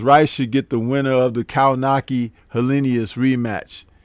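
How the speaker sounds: plain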